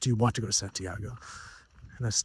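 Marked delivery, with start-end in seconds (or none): 0.0-1.2 mock big action-film style dramatic delivery. Retelling what a helpful woman asked that morning: imitating a dramatic tone. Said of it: "It was so dramatic".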